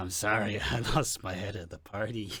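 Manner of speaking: low, hushed, deranged, unhinged delivery. Podcaster mimicking how Corey delivered an apology, in a deranged Corey impression. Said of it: "says it like the most deranged fucker".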